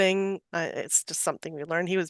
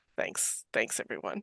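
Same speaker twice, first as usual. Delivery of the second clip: grumbled, whispered mutter under the breath; 9 semitones lower, 9 dB quieter than usual. Narrating a character who realizes everyone has left him, muttering under his breath. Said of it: "mutters under his breath".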